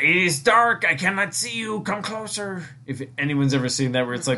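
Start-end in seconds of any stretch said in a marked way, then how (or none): 0.0-2.6 comedy-sketch talking goat voice, pitched up. Describing a comedy skit, quoting the talking goat: Adam Sandler goat voice. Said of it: "the Adam Sandler skit of, like, the goat".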